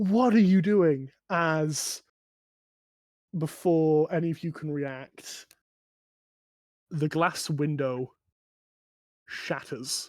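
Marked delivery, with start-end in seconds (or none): 0.0-1.1 high, fast panicked shout. A game master voices a man shouting out toward the players: shouting out. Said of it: "and he shouts out".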